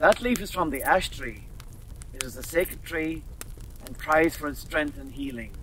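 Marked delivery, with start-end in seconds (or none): none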